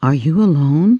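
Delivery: whispered. Narrator reads the mouse speaking to a captive girl, whispered. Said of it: "whispered the mouse".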